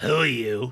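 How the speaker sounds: loud, furious voice with great anger. Voicing a drunk gnome dockmaster confronting an intruder: great anger. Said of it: "with great anger".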